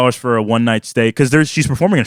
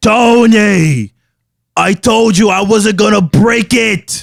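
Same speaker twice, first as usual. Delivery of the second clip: pitched-up, slow drawl with one word stretched long; 8 semitones higher, 4 dB louder than usual. Showing the others a Christopher impression from The Sopranos. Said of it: "a pretty good Christopher impression".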